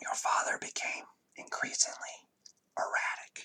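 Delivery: barely voiced, hushed, breathy whisper. A woman leaning close speaks to the listener: whisper. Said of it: "And I'm gonna whisper".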